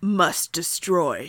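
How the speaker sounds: low, growly, demonic monster voice. A shadow demon answers Kai in a low, growly demonic voice. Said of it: "this low, growly, demonic voice".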